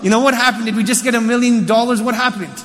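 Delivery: ordinary delivery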